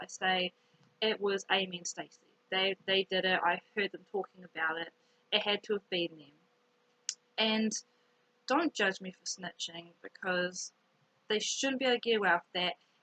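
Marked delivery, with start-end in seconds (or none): none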